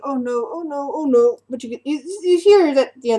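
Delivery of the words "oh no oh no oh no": slow, panicked giant voice, alarmed and dismayed. Voicing a giant as a tower lands and shakes: panicked giant. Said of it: "the giant is like".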